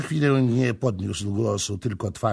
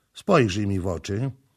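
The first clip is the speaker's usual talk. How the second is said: ordinary delivery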